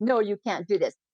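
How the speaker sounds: plain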